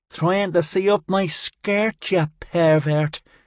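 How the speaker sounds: high, contemptuous, scornful sneering voice. Narrator voicing a girl standing over a fallen man, sneering.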